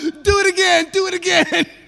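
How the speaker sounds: play-acted jeering hyena laughter, cracking up. Retelling the story of hyenas mocking a lion cub: imitating laughing hyenas. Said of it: "the hyenas bust out laughing".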